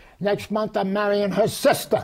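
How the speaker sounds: shouted, yelled. Quoting what a man said to the speaker, retelling a yell. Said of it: "He yells at me".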